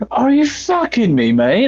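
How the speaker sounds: put-on East London Cockney accent. Speaker tests an accent idea for a game character, cockney accent. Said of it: "Cockney accent".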